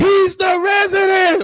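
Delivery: very high, full-throated scream at top of lungs. Retelling a neighbor's words to armed police: imitating a scream at full volume. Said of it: "I scream at the top of my lungs".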